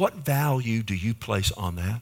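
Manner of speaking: said tenderly. Speaking to god in prayer about a bible verse, said tenderly. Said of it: "I say this tenderly".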